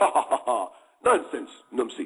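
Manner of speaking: put-on laughing in British accent. Retelling a movie scene where Lieutenant Gordon laughs off the Mahdi: British accent. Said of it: "he laughed with his British accent".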